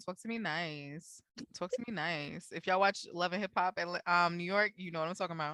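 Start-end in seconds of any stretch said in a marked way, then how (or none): 0.0-2.5 slow, deliberate, unhurried delivery with nice stretched out. Quoting a reality TV star's catchphrase: Mariah Lynn voice. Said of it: "And you had it in her voice".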